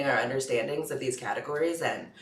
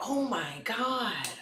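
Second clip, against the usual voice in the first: put-on American freak-out; 9 semitones higher than usual. Retelling how Japanese people impersonate an American: mock American freaking out. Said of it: "impersonate, like, an American".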